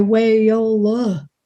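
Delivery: put-on drawl stretched over three syllables. Imitating how a relative stretches one syllable into three: Aunt Pat's drawl. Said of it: "It would be three syllables".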